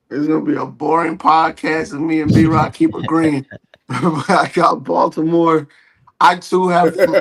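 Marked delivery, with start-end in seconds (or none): 6.2-7.1 voice cracking hard, breaking on the words. Podcast guest answering the host's question, voice cracking. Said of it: "my voice cracked hard as hell".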